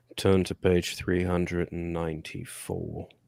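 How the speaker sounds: very slow put-on English accent, every word dragged out. Asked for a Dumbledore impression, offering something better instead: Severus Snape impression. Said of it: "hear your English accent".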